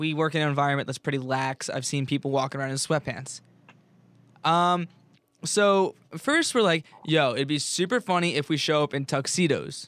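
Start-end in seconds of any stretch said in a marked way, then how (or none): none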